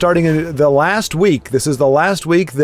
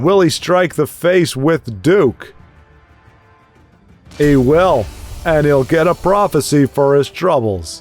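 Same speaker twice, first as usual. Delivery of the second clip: loose, easy put-on voice slid into. Commenting on a card game play in an easy voice: John Wayne impression. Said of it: "That's a really easy voice to slide into".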